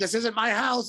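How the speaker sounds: abrupt, sudden, high-pitched yell. Speaker recounts a man throwing the door open, retelling a yell. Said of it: "I like yelled it".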